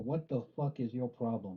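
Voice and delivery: plain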